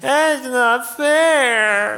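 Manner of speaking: put-on very high, loud, drawn-out whining kid voice. Showing how children say a familiar complaint, imitating a whining child. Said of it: "in a slightly well-aged voice like this".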